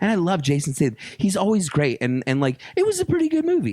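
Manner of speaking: voice going way up, very high, excited, squeaky. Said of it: "when her voice goes up like that".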